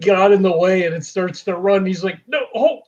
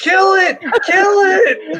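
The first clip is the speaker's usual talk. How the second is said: mock very high shrieked scream, word it drawn out; 11 semitones higher than usual. A player voices his wrestler character during a fight: screaming. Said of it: "He's screaming".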